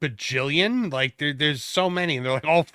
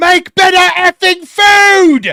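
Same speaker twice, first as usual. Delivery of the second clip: shrill, booming, very slow, drawn-out British bellow; 17 dB louder than usual. Mocking how a British man yells at restaurant owners: imitating a yelling British man. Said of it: "a British man comes in and yells".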